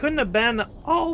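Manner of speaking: voice breaking up high mid-phrase. Speaker describes a half-remembered film to listeners, voice cracking. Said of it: "my voice just cracked".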